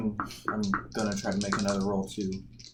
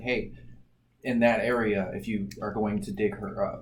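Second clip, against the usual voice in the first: ordinary delivery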